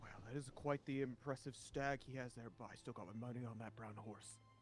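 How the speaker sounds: hushed, whispering voice. Speaking in character to Jalen about an impressive stag: whispering. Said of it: "That's why I'm whispering it".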